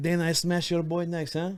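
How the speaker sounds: put-on French accent. Retelling how a fighter taunted Dana after a win: imitating a fighter in a French accent. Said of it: "I gave him a French accent".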